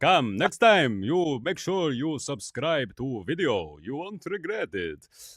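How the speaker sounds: put-on vampire count accent. Closing the first episode, the speaker asks listeners to subscribe, in a Dracula voice. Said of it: "I sound like uh, Dracula".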